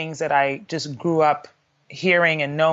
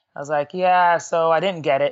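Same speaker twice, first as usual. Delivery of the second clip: normal talking voice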